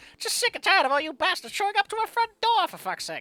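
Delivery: put-on cranky old-person voice. Voicing a game character tired of visitors at the door: old cranky voice. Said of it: "the old cranky voice".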